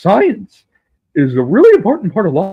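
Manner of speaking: animated swooping voice. Doing an impression while waiting for people to join: Neil deGrasse Tyson impression. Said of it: "Neil deGrasse Tyson".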